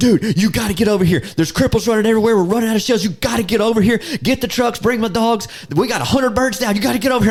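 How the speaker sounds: acted, frantic, very high-pitched, rapid-fire panicked rush. Retelling Landon's phone call asking for help: imitating Landon panicking. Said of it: "I can hear the panic".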